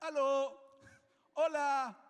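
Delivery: loud, high-pitched shout. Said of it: "que empecé a gritar".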